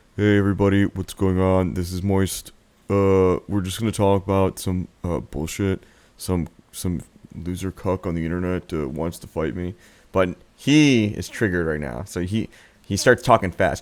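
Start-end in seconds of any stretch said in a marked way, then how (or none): 0.2-9.8 unbothered, offhand, relaxed, loose delivery. Imitating Moist when he doesn't care: imitating Moist not caring. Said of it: "when he really just doesn't give a shit, he's just like".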